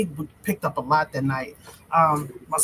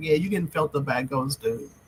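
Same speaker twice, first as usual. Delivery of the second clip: ordinary talk, nothing marked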